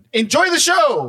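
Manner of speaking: put-on heated yell. Retelling a fight where a partner asked why he was yelling: imitating own past yelling. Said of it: ""Why are you yelling at me?"".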